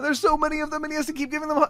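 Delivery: very high, excited squeal.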